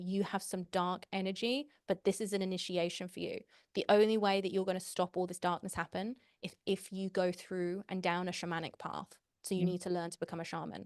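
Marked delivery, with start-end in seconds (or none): none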